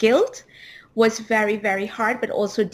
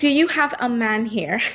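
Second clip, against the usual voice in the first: put-on stern tone. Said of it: "in this stern Radha way".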